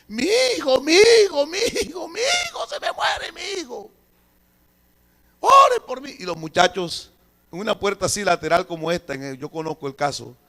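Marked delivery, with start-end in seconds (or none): 0.1-6.1 put-on shrill, very high screaming cries. Retelling a mother at church begging over her dying baby: imitating a mother screaming. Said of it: "y daba gritos".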